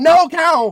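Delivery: imitated screaming. Retelling watching a city explode with a cow nearby: retelling a scream. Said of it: "I just started screaming".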